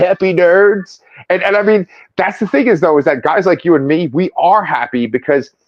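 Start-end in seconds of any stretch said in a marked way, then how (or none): 0.0-1.0 movie trailer voice-over narrator delivery. Retelling the Honest Trailers review of Andor: Honest Trailers movie voice guy. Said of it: "He's like".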